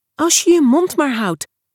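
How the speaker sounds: little high-pitched nervous squeak. Narrator reads Gemma answering Ruben about the boy she likes: nervous squeak. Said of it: "piepte Gemma nerveus".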